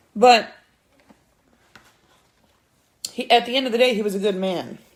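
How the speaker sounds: speaking through tears, crying. Speaker talking about their daddy, crying while speaking. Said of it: "I'm crying about my daddy".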